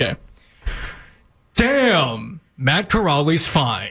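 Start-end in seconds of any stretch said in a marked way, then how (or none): 1.5-3.9 very slow newscaster delivery, damn drawn out. Asked by another person to read a line in his news voice. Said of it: "can you read it in your news voice".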